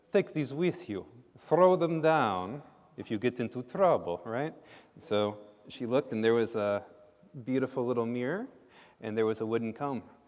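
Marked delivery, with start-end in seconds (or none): 0.1-4.2 put-on Russian accent. Voicing a talking dog that hands the runaway girl gifts: Russian accent. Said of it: "it had a Russian accent".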